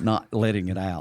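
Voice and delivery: plain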